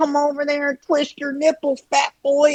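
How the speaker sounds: very high, small, squeaky rat voice. Describing a man's unique voice, imitating high-pitched rat voice. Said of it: "almost like a rat voice, like high pitched".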